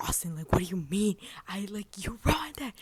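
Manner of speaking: mock shouted screaming outburst, pitch climbing. Retelling a moment of screaming at Austin: imitating herself screaming. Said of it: "I just started screaming at Austin".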